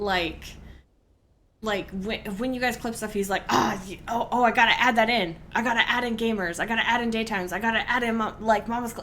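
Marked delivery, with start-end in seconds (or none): 3.5-9.0 put-on, excited voice. Retelling how the clip editor reacts to clips: imitating excited Crass. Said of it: "Crass gets so excited".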